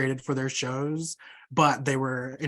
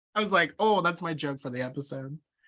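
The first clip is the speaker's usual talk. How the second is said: plain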